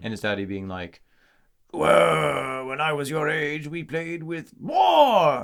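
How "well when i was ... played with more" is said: put-on, slow, drawn-out, pitched-up Scottish accent. Imagining an antique dad answering his child, in a Scottish accent. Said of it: "Is that your best Scottish accent?".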